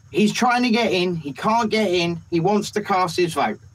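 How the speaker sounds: normal talking voice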